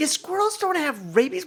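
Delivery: high, mocking put-on voice.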